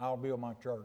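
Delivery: still, very soft, low, hushed voice. Preaching from Matthew, quoting what God says, in a still small voice. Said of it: "That's what I said in that still small voice".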